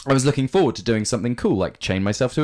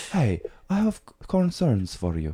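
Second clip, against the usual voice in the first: put-on fake Eurotrash accent; 4 dB quieter than usual. Acting out a personal trainer confronting a client: put-on Eurotrash accent. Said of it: "What accent is that?".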